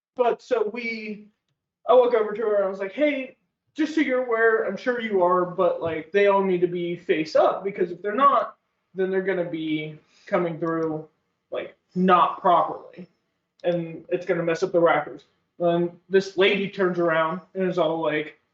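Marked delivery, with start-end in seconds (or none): none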